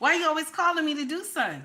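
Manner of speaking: curt comeback with attitude. Retelling an annoyed reply to a partner asking for something: retelling a snappy tone. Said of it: "My tone will, like, be a little snappy".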